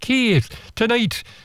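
very high, failed accent attempt that sounds Scottish. Retelling what a lady said to him, attempting her accent, which came out scottish. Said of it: "No, that's Scottish".

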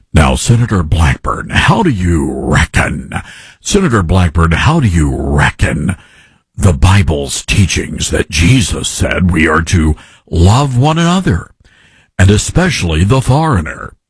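deep, fake news anchor voice. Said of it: "he's got the fake news anchor voice on".

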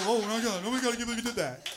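put-on panicked voice. Acting out the frightened cyclist after a car scare: imitating a scared cyclist panicking. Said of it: "Make him, you know, real".

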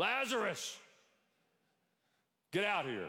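high, calling-out voice. Speaker in church retells Jesus calling Lazarus out of the tomb; Jesus's loud call. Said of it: "Jesus said it in a loud voice".

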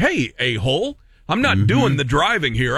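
normal talking voice

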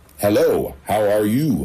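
absurdly officious, official-sounding voice. Narrator greeting a woman who slides by, in an absurd official-sounding voice. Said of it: "I said in an absurd, official-sounding voice".

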